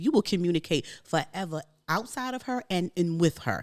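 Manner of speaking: ordinary delivery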